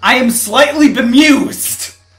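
mocking irritated tone. After the other player yells they're irritated, the speaker gives a mocking imitation of irritation. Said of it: "I had to make fun of you a little bit".

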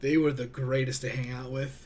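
thick, mocking, sarcastic tone. Remembering high school friends who played Yu-Gi-Oh!: sarcastic. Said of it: "he said sarcastically as he rolled his eyes".

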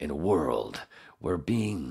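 movie trailer announcer voiceover. Trying to read a line aloud in a movie trailer voiceover. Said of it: "I can't do a voiceover".

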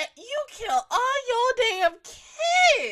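high-pitched, loud, slow, angry crying shout.

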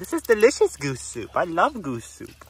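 swooping, animated goose voice. Voicing a goose who has his face in the soup: voicing Henry the goose. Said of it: "He's like".

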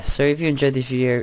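rushed fast loud delivery. Wrapping up a video for viewers, way too fast. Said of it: "that said that way too fast".

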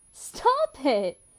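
speaking through laughter. A man covers himself as another man keeps taking his picture; laughing. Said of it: "Kurt laughed".

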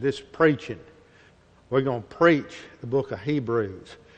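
Texan accent from the American South. A speaker explaining a word in Hebrews shows it off, in a Southern Texas accent. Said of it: "Let me say that good Southern Texas accent".

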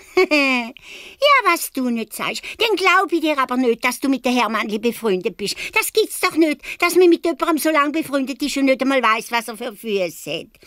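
very high-pitched, scornful, mocking tone. Reading a story aloud, voicing the innkeeper's wife answering Balz, mocking. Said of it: "fragt die Wirtsfrau".

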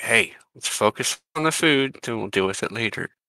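hushed, half-whispered aside. Half-whispering in character to a companion at the table: half-whisper. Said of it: "I'll whisper to him".

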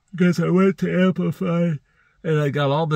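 words stretched by a yawn. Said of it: "sorry about the yawning".

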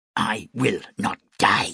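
spoken as a hiss. Narrator reading a monarch who has just hurled away his astrologer, hissed. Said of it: "he hissed".

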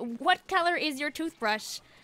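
usual speaking voice

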